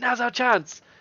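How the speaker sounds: shouting call. Voicing a character in a fight scene: yelling. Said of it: "Yentha yells out".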